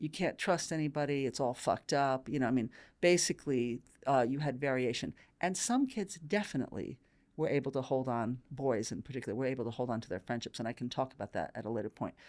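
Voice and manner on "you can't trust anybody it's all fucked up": put-on angry tone. Describing how some kids reacted, mimicking an angry voice. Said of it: "then a sort of angry voice".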